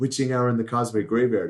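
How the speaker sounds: ordinary talk, nothing marked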